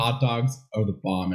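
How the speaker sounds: ordinary talk, nothing marked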